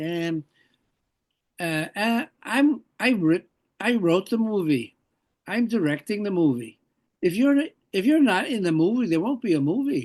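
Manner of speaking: put-on Scottish accent. Quoting the man who wrote and directed the movie; imitating his scottish accent. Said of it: "with his Scottish accent".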